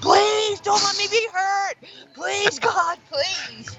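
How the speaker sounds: very high-pitched, drawn-out pleading scream. A host recalls falling at 2 a.m. and retells screaming to the Lord. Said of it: "I'm screaming to the Lord".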